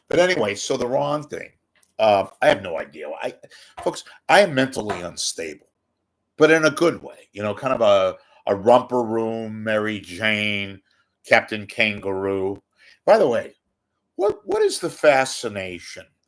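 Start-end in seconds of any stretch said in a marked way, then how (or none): 13.0-16.0 swooping TV commentator style voice. Talking to folks, you slip without even trying into an Andy Rooney voice. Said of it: "it's my Andy Rooney coming out".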